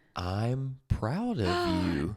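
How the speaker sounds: very slow, deliberate, each word drawn out. Practicing words of affirmation with a friend, the speaker says it real slow. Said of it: "I'm gonna say it real slow".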